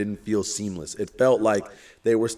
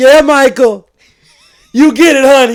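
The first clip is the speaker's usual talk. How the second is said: imitated woman's yell, higher and louder; 16 dB louder than usual. Retelling a woman in a theater cheering at the screen: imitating a woman yelling. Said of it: "She's just yelling".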